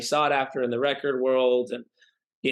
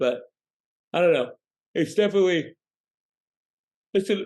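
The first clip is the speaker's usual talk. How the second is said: halting, high talk through a yawn; 6 semitones higher than usual. Jet-lagged speaker in a conversation, apologizing for it: yawning while talking. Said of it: "sorry for yawning".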